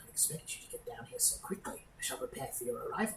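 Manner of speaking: hushed, soft monster voice. Game master voicing the creature as it speaks to the players: Nothic monster voice. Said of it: "still in the Nothic's voice".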